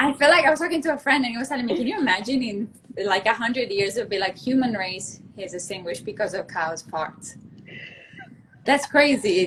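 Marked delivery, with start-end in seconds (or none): none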